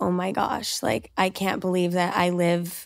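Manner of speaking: normal talking voice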